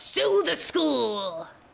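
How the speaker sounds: high-pitched put-on voice with swooping pitch. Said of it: "that had to be said in a [name] voice".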